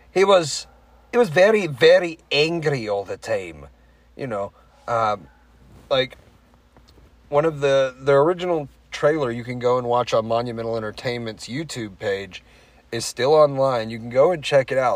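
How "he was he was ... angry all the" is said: put-on Scottish accent, pitched up. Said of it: "So he talked like this".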